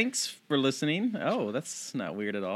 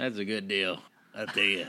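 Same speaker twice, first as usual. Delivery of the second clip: raspy character voice; 6 semitones lower than usual. During a sponsor read with the other hosts, doing a Beetlejuice voice. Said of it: "You sound like Beetlejuice".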